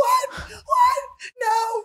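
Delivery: put-on very high, blood-curdling shriek of disbelief. Retelling a girl getting a call about a death: imitating someone screaming. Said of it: "she's screaming at the top of her lungs".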